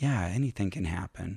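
hushed, soft half-whispered aside. Retelling how a helper on stage answered the woman: imitating a half-whisper. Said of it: "just kinda whispers".

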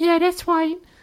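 put-on very high, eerie, creepy baby voice. A talking baby answers about being nine days old, creepy baby voice. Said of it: "I hope you like this creepy baby voice".

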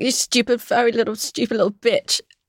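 half-voiced shouting, kept contained. Recalling being told to shout abuse at lambs as therapy; retelling shouted abuse. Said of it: "just shout abuse at all of the lambs".

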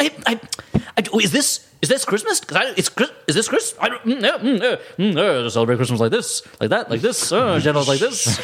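high, stammering, comic patter. Imitating the brother-in-law character, who talks like Jackie Mason. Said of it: "Turned into Jackie Mason".

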